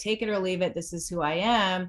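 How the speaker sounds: ordinary talk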